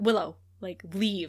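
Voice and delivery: put-on stern tone. Recounting a scene, acting out one character ordering another to leave: retelling a stern order. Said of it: "he said it so sternly".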